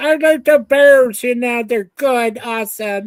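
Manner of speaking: put-on slight, subtle Canadian accent. Retelling how Mike Myers said he likes the Bears: imitating Mike Myers with Canadian accent. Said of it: "his little Canadian accent mixed in there".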